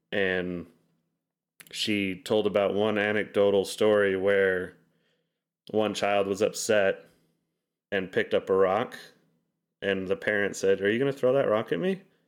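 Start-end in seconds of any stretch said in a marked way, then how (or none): 10.8-12.0 gently teasing, friendly, playful tone, pitched up. Retelling how a parent asked a child holding a rock: imitating a playful tone. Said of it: "in a playful way".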